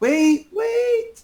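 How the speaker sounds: very high, tiny, gnomish called-out voice. Game master voices a figure calling out from the edge of town: small gnomish voice. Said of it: "you hear a small gnomish voice".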